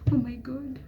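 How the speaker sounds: high-pitched stressed moan. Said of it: "Don't just sit there moaning".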